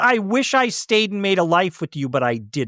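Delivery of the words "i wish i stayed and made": usual speaking voice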